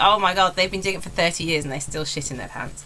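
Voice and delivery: plain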